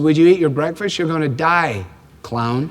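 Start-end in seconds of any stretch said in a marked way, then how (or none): none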